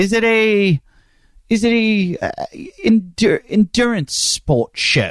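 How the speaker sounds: high put-on British accent. Host listing what kind of show this is, in a British accent. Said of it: "I don't know why I just switched into a British accent".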